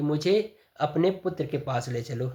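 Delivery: plain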